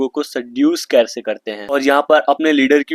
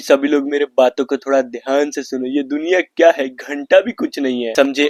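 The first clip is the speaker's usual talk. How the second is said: ordinary talk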